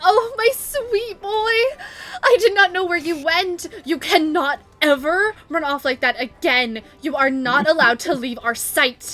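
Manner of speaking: relieved scolding through tears. Voicing a mother who runs to her lost son: tearful, relieved mother scolding. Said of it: "you hear her go".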